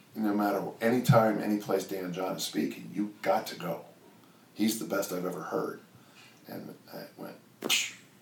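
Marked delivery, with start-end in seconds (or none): none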